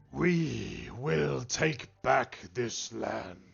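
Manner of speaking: bellowing, booming, creaky, rough tree voice. Voicing the tree as it answers the group, bellowing tree voice. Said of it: "The tree bellows".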